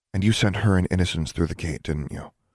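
plain reading voice

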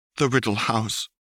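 slightly shaky, unsteady voice. She throws flue powder into the fireplace and names the destination, slightly shaky voice. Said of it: "in a slightly shaky voice".

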